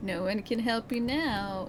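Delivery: slow, sinister, menacing voice. Reading a character's line aloud while gaming, in a sinister murderer voice. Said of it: "in the voice of a murderer?".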